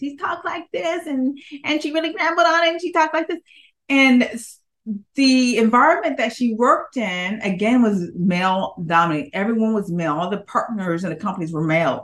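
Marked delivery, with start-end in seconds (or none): 0.0-3.4 put-on high, fast, rambling, mousy little-girl voice. Describing a woman at an accounting firm, speaker imitates her: little girly mousy voice. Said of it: "her voice was very little girly, very mousy".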